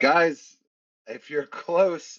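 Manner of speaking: very slow, loud, high, drawn-out, carrying call. Calling out in character to companions who may be close: louder voice. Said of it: "in a louder voice now".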